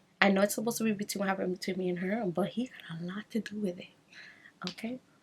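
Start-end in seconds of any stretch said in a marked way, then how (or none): 2.3-3.9 whispered, much softer, secretive aside. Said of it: "hushed aside to viewers".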